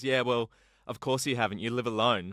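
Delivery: ordinary delivery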